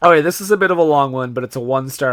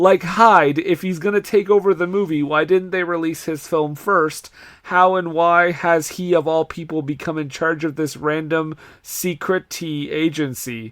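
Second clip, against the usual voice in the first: ordinary talk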